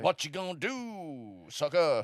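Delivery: fake, swooping American accent, do drawn out. Voicing a figure in a made-up murder scenario: put-on American accent. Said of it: "is this Booker T?".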